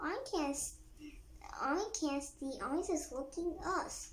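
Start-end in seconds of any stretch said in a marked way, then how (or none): none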